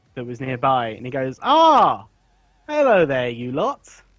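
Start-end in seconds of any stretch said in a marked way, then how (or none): 1.4-3.8 put-on high, slow, drawn-out old man voice. Voicing an old man greeting the party: old man voice. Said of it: "So the old man walks out".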